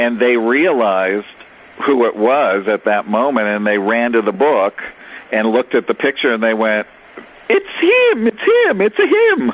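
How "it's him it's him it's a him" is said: over-the-top, very bad put-on Italian accent, very high, slow. Retelling how people recognized him from a book picture, bad Italian accent. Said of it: "that's my bad Italian accent".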